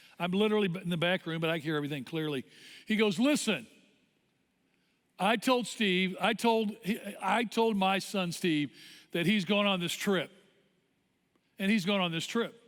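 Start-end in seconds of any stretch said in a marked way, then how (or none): none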